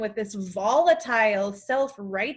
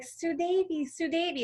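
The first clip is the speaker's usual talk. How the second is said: put-on romantic tone, higher; 7 semitones higher, 5 dB quieter than usual. Retelling how he greeted her by her first given name, mock-romantic tone. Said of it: "he just flipped to this romantic-y vibe".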